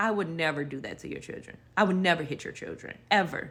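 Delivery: mock crying, tearful, earnest, through sobs. Retelling the nanny's reply to the accusation: imitating someone speaking through tears. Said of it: "through the tears was like".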